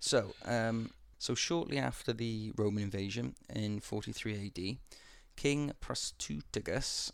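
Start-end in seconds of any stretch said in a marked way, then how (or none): 5.4-7.1 very slow, careful, much higher. Telling a history story, saying a king's name very slowly. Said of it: "I'm going to keep saying that slowly".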